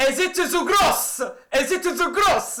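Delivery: hint of a mock Italian accent. Ending a list of words, asking a question with a bit of an Italian accent. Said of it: "I've said that with a bit of an Italian theme to it".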